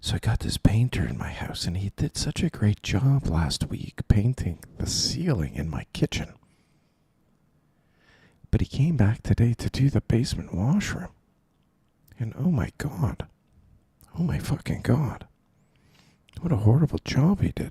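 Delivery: whispering. Telling listeners a story after checking they can hear him, whispering. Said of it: "When I'm whispering".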